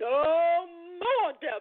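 deep, somewhat loud voice. Demonstrating to listeners how to speak to the devil: a little loud. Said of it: "tell him a little loud".

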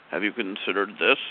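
put-on deep jolly voice. Voicing the planet as you imagine it speaking, in Saturn's scruffy, deep, jolly voice. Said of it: "He kind of goes in a scruffy voice or a deep, deep, jolly voice".

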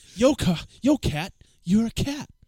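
drawn-out, slow, loud voice. Retelling a comedy sketch about talking to animals: Mark Wahlberg impression. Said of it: "I'm Mark Wahlberg".

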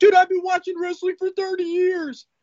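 mock very high, heated, angry yelling. Retelling a man yelling at another about a wrestler's privacy, imitating someone yelling. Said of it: "And he yells at him".

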